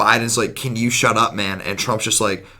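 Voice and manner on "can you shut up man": normal talking voice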